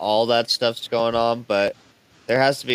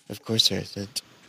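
soft, under-the-breath whisper; 3 semitones lower, 6 dB quieter than usual. Acting out a local answering a traveler: imitating someone whispering. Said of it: "You just hear him whisper".

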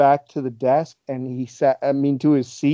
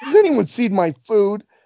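mock screaming outburst with raised pitch; 7 semitones higher than usual. Retelling how someone came back and screamed about his missing food: imitating Blackman screaming. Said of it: "He screamed".

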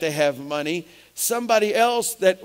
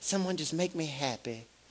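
very soft, hushed, put-on West Texas woman's voice; 3 semitones lower, 12 dB quieter than usual. Trying out a quoted line again, in a West Texas woman's voice. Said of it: "is that the West Texas woman's voice?".

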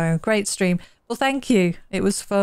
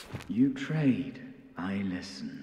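eerie, very low, hushed spooky voice; 12 semitones lower, 12 dB quieter than usual. A ferryman greets a new friend and offers to trade, in a spooky voice. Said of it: "he's got a spooky voice".

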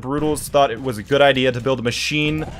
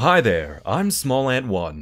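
put-on pleasant nice voice, dropped low; 4 semitones lower than usual. A streamer shows viewers the best voice they can give, put-on nice voice. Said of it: "There's the best voice I could give you".

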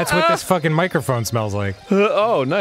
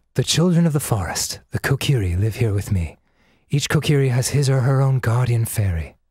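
very breathy narration voice; 3 semitones lower than usual. Practicing voiceover stuff, reading a narration in a breathy narrator voice. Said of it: "very breathy".

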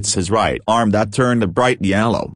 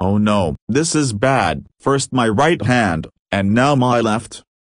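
ordinary delivery

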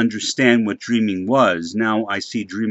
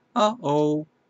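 put-on voice, fairly high-pitched but not very high; 5 semitones higher, 4 dB quieter than usual. Approximating a heard voice saying uh-oh: relatively high-pitched voice. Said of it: "kind of not that high pitched, but relatively high pitched voice. I'll try to approximate it".

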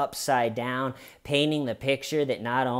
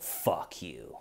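acted, mean, nasty whisper; 8 semitones lower, 10 dB quieter than usual. Retelling how Sarah answers George, stuck in a suitcase, in Sarah's put-on mean voice. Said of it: "in a just a mean voice".

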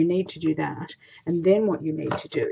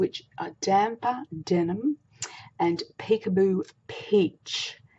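very slow, careful delivery, word by word; 3 semitones higher than usual. Host of a stamping tutorial naming the two colours, saying it really slowly. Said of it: "Have to say that really slowly".

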